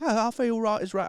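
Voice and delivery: badly done mock Scottish brogue. Like you're doing a cheerfully clumsy impression of a friend's quick recovery, rolling your r's and knowing the accent is terrible. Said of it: "I can't do Scottish".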